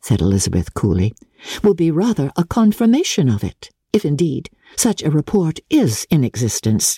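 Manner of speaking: plain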